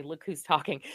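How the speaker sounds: ordinary delivery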